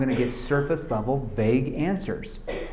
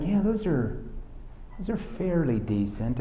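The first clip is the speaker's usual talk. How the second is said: skeptical, doubtful, unconvinced delivery; 4 dB quieter than usual. Showing how tone alone can seed doubt in a reply, skeptical tone. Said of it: "That's more of a skeptical tone".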